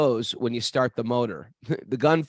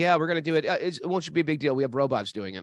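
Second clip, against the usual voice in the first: put-on casual, offhand, nonchalant tone; 3 semitones higher than usual. Retelling what staff said about a robot surgery: imitating a nonchalant tone. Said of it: "they said it very nonchalantly".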